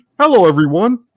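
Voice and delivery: high, loud squeaky voice. Retelling a crowd turning to look, the speaker greets them in a worst Kermit the Frog impression. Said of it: "in my worst Kermit the Frog pre- impression".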